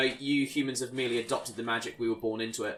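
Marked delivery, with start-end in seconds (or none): none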